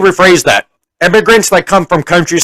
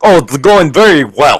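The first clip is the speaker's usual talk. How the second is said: put-on thick heavy Russian accent; 3 semitones lower than usual. Retelling a woman's reply to his greeting, imitating thick Russian accent. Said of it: "she had the thickest Russian accent".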